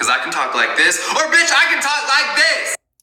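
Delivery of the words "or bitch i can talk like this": very high, loud, full-on shouting. Showing how raised voices sound: yelling. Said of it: "I don't need to hear you yelling".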